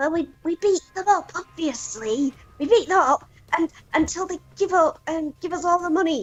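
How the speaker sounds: high goblin voice. Storyteller voices the goblin Mogra answering the ogre, in Mogra goblin voice. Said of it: "the goblin called Mogra goes".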